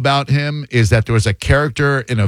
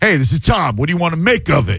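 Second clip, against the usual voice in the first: daring, standoffish, pitched-up tough-guy voice; 6 semitones higher than usual. A host teases a caller about his greeting, mocking Tom as standoffish. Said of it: "you're daring me to knock a chip off your shoulder".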